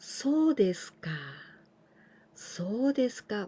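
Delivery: falling pitch at the end of そうですか. Teaching a Japanese expression and showing its intonation, falling intonation. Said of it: "Now I going down".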